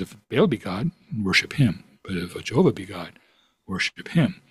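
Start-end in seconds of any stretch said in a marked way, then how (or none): none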